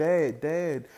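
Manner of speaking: plain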